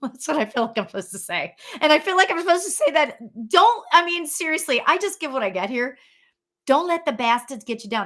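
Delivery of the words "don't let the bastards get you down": put-on New York accent. Passing on a saying the speaker was given, in a new york accent. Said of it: "in a New York accent".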